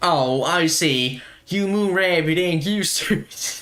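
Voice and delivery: heavily laid-on put-on American accent. Answering the moon rabbit who finds this place agonizing: put-on American accent. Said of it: "Do you like my American accent?".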